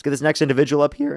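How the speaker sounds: cracking voice. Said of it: "the voice cracks I've been having".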